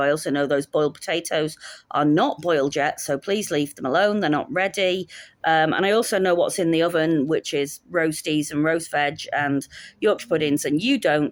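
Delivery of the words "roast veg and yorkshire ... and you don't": ordinary talk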